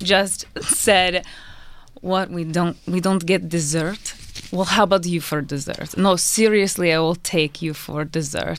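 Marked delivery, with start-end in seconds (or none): 2.0-8.6 put-on sexy, seductive male voice. Retelling what a man said to them, imitating his sexy voice. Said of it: "that sexy-ass voice from when you did it".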